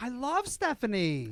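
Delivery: very high, gushing, pitched-way-up voice. Retelling what a former intern said about a guest: imitating Ronan. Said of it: "It's a really good impersonation".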